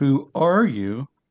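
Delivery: ARE stressed, drawn out slow with a rise.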